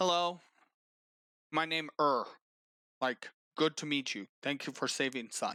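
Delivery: gruff put-on character voice. Narrating a scene, the speaker voices a father thanking you for saving his son: gruff, broken Common speech. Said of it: "in a very gruff and um, fairly broken, common".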